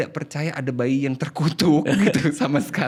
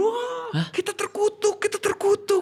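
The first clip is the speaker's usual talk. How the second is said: put-on crying shriek, much higher, slower. Retelling a mother and grandmother seeing the baby girl, imitating their crying shrieks. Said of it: "kenapa nangis kejerit".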